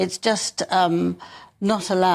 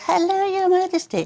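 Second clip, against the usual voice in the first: very high little squeak, squeaky voice; 12 semitones higher than usual. Retelling the terrible curtsy in the Netflix thing, speak in a squeaky Meghan voice. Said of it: "said with a squeaky voice".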